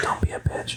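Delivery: whispered, cheeky aside.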